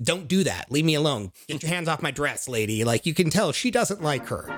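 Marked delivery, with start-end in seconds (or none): 0.0-2.8 mock scolding tone, snapping and sharp. Retelling a film scene where someone plays with her dress, retelling a scolding snap. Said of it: "Frida immediately gets after her and is like".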